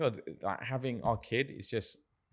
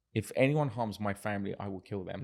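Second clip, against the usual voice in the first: usual speaking voice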